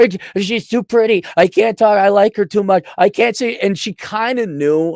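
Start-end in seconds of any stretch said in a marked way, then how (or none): 0.0-3.6 frantic, desperate, begging voice. Retelling how he begged the teacher to move his seat: imitating his own pleading. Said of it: "I begged and pleaded".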